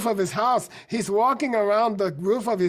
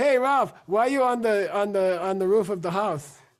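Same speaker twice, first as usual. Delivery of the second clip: ordinary delivery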